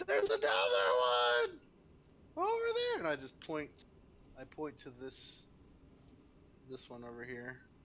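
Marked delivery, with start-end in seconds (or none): 0.1-3.0 very loud, very high swooping yell. Telling a story, acting out calling out to people, retelling a yell. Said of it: "I yell to them".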